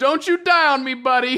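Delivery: mild, high-pitched crying sound. Reading out a fan story, voicing Sonic: Sonic yelling. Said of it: "Sonic yells out".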